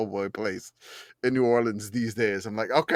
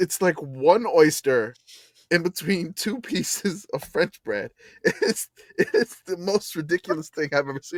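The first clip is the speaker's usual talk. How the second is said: high voice, speaking through helpless laughter; 6 semitones higher than usual. Describing a tiny po' boy in a photo, laughing while talking. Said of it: "I can't stop laughing".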